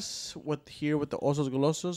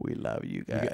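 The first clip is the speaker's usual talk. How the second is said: breathy, sultry, sensual whisper; 6 dB quieter than usual. Mocking another speaker's mic delivery: imitating a sensual mic voice. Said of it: "Why are you so sensual with the mic? You're like".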